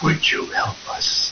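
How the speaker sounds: faint, soft, breathy hushed whisper. Repeating what the EVP recording in the basement said: whispered voice. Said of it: "It's like that".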